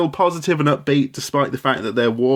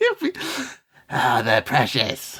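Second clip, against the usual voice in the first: swooping, sing-song creature voice, pitch rising and falling; 4 dB quieter than usual. Doing an impression, then naming it: Gollum voice. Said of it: "That's Gollum from Lord of the Rings".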